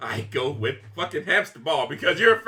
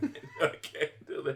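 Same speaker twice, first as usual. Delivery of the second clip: breathy whisper through helpless laughter and tears; 4 semitones lower, 11 dB quieter than usual. Reacting to a bad smell in the room: laughing while talking. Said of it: "I'm crying".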